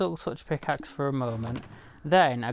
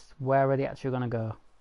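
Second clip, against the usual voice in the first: ordinary delivery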